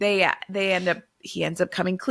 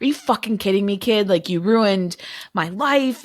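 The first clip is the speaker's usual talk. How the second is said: furious, angry, ranting blow-up. Retelling how a character gets up, stalking around the apartment: imitating an angry outburst. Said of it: "Leo is pissed".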